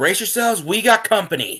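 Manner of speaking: very high, loud, urgent alarmed shout. Voicing a character warning the party of something approaching: yelling. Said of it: "Shira basically just yells".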